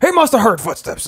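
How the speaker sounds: high-pitched sportscaster commentary voice. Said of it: "John Madden commentating".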